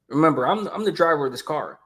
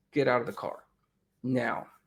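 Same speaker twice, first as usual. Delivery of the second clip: play-acted angry, forceful, hard tone; 4 semitones lower, 8 dB quieter than usual. Retelling ordering people out of a taken car: retelling going off on someone. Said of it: "I went off on 'em".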